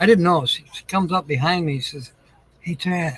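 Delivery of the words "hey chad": soft, hushed whisper under the breath. Retelling a neighbor coming up from behind: imitating a neighbor whispering. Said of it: "she kind of whispers".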